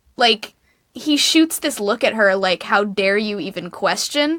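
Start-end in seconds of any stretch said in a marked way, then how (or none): none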